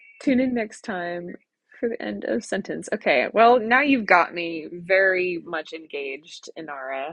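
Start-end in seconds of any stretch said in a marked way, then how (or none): none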